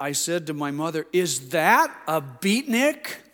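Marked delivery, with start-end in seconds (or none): 1.1-3.2 put-on very loud, slow, drawn-out, swooping child voice. Recalling asking his mother about a man they walked past, in a very loud voice. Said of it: "in a very loud voice".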